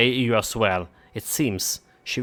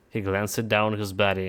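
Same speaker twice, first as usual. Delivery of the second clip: normal talking voice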